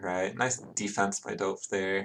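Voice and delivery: ordinary talk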